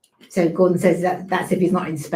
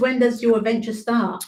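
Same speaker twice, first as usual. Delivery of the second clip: usual speaking voice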